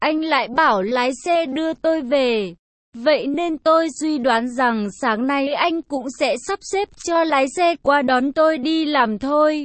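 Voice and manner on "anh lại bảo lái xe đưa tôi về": usual speaking voice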